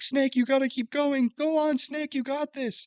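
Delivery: mock yell, very high-pitched and screamed. Retelling a game scene where Otacon urges Snake on: imitating Otacon screaming. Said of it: "Otacon is screaming at him".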